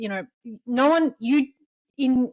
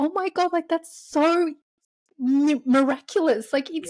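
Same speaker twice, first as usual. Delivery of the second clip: teary, pitched-up voice on the verge of tears; 6 semitones higher than usual. Talking with another speaker about conception, tearing up. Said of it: "I'm actually tearing up".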